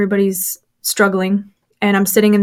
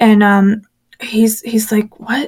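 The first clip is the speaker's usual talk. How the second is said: ordinary talk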